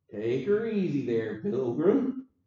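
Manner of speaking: slow, drawn-out, teasing drawl. Quoting an old movie line in a John Wayne drawl. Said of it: "we even hear it in a John Wayne voice".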